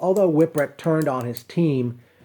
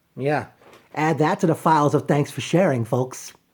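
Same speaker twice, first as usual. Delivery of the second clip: ordinary delivery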